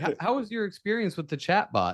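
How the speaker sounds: high, cheery customer service manager voice.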